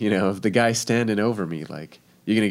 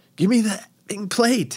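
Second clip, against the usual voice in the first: loud, high-pitched screaming; 12 semitones higher than usual. Retelling a dream where the chef screams for a plate: imitating a screaming chef. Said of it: "the chef is screaming at me".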